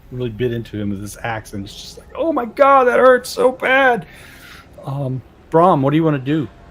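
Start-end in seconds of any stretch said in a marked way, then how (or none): 2.1-4.0 shrill, high, drawn-out sobbing wail. Voicing a goon on the floor, hit by an axe: crying goon voice. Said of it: "he's crying".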